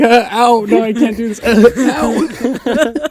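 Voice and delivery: very high, very slow, drawn-out laughing through pain. Retelling a brother after surgery when laughing hurt: imitating someone laughing in pain. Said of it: "laughing would hurt".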